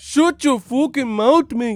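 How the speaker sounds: loud, very high put-on Irish brogue. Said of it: "had me with an Irish accent".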